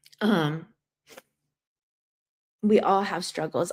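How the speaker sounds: crying while talking. Answering viewers' comments after not wanting to cry: tearful. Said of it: "I did not want to cry on here".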